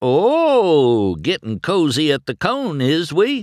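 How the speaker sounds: playful, high, loud teasing, "oh" stretched long. Narrator reads one character teasing another on arrival: teasing. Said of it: "Mater teased".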